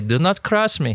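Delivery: put-on thick Egyptian accent. Quoting a mother's warning: imitating mom's thick Egyptian accent. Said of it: "as my mom would say".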